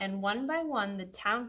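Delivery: ordinary delivery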